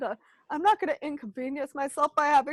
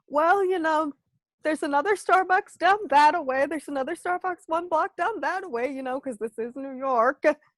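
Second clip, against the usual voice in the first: ordinary delivery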